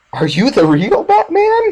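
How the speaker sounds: very high, wildly swooping, bad villain voice. Comparing movie villains, speaker quotes the Joker to Batman: terrible Joker impression. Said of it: "terrible Joker impression".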